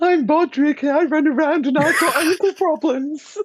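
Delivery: very high and loud voice. Asked for an impression of the player character Bodrick. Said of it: "give us your best Bodrick impression".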